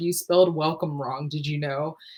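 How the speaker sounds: acted confrontational manner. Retelling walking into a business as a young kid: confrontational remark. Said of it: "I would be confrontational".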